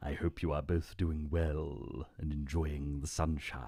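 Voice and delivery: low, sinister villain voice. Testing an impression on Magenta and Burner, continuing in a Jafar voice. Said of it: "Is that quite a good Jafar".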